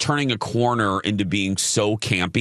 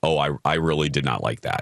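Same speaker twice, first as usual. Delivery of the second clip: put-on serious voice, much lower; 8 semitones lower than usual. Recalling Colin's reaction to a disliked sequence, imitating Colin's serious tone. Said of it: "in a very serious tone".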